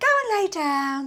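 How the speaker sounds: cheerful delivery. In voice practice, told to make a short command convey happiness, happy voice. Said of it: "What I want your voice to convey is happiness".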